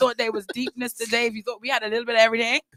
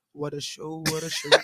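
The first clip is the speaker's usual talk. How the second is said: deep, soft, hushed voice; 7 semitones lower, 10 dB quieter than usual. Before telling the listeners what a great time you had, use your Minister Timmy voice. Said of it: "in my Minister Timmy voice".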